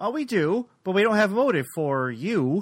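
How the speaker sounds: very slow, unhurried, drawn-out, deliberate delivery. Retelling a Columbo scene where Columbo answers the suspect, speaking very slowly. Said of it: "Columbo just says very slowly".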